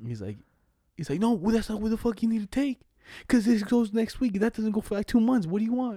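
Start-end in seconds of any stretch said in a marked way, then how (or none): 1.2-6.0 put-on angry yelling, pitched up. Retelling how the boss yelled at a coworker: imitating the boss yelling. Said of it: "And he just yells at him".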